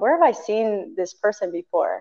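ordinary talk, nothing marked

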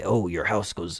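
deep, low commercial voice-over announcer narration. Retelling a truck ad seen during a show, in a deep ad-announcer voice. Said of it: "In the deep voice, they say".

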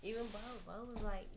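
speaking too quietly, soft.

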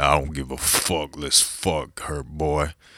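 deep, loud, drawn-out voice. Repeating what the woman he was kissing said to him: imitating her deep voice. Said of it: "She had deep ass voice".

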